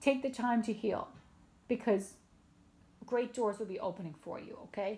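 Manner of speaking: weeping tearful voice, halting and breaking mid-phrase. Speaker encouraging viewers directly, crying. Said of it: "Sorry about crying".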